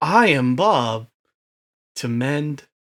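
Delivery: put-on old slow-talking voice. Imitating how the character sounded in the crossover episode: imitating old, slow-talking Bob. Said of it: "speed it up, buddy".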